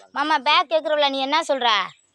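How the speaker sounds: loud, high call from a distance.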